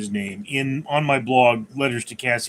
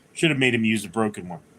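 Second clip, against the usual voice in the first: normal talking voice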